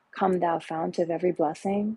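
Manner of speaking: ordinary talk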